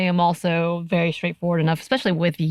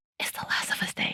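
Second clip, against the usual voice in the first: very soft hushed whisper under the breath. Retelling what she told the speaker after the speaker got scared, whispering. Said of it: "She whispers it".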